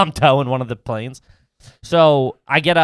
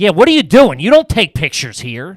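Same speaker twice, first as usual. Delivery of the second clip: loud, mock angry, full of attitude; 4 semitones higher, 5 dB louder than usual. Retelling how a man scolded them for taking pictures, imitating an angry man. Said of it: "like angry".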